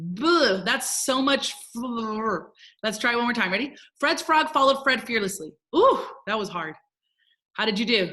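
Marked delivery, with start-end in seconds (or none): 4.0-5.5 super fast, rapid-fire, rattled-off run. Leading friends through a tongue twister one more time, super fast. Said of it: "Let's say it super fast".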